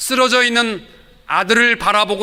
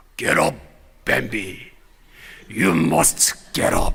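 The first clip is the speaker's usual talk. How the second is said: deep, breathy, low, hushed voice; 8 semitones lower, 5 dB quieter than usual. Retelling a scene where a father speaks to Bambi, who has fallen: lowered voice. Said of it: "목소리를 깔고 얘기합니다".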